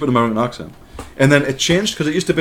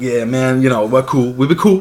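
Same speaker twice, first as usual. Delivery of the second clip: affected street slang delivery.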